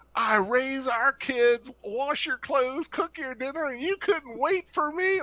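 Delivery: yelled, complaining, very high-pitched voice. Retelling how an ex confronted him at the snack counter: imitating an ex yelling. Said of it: "and just, like, yelling it".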